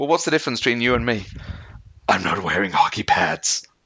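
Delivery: ridiculous, hammed-up comic-book superhero voice. Quoting fake Batman's line from the sequel, in a Batman impression. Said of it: "your Batman impression is pretty ridiculous".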